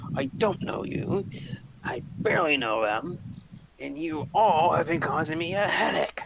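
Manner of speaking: grumbling under the breath. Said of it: "start grumbling under his breath".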